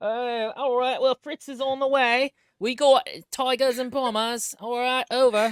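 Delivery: put-on Cockney accent. Reporting to a teammate on stream like old-timey warplanes, in a Cockney accent. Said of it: "fine Cockney".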